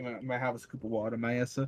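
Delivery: put-on deadpan, dead serious, low and flat. Retelling asking the trainer for a scoop of water: imitating own dead serious delivery. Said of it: "dead fucking serious".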